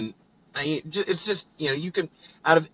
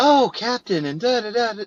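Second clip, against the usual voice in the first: breathless, very high-pitched voice; 10 semitones higher, 3 dB louder than usual. Imitating a character's voice, high-pitched and breathless. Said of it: "so high-pitched and so breathless".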